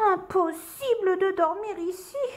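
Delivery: very high-pitched, anxious, worried fretting. Reading aloud, the lazy ladybird on the scratching bear's ear speaks, worried. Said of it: "s'inquiéta la coccinelle paresseuse".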